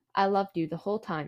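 ordinary talk, nothing marked

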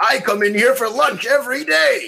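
loud, high, booming, belted-out voice. Recalling the Ritual Master's line, the speaker does the loud Jerry Nelson voice. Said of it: "just that loud voice of his".

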